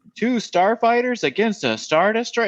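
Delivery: very high, poorly delivered, bad line reading. Mocking a background pilot's line in a movie: imitating a poorly delivered line. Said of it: "deliver their lines so poorly".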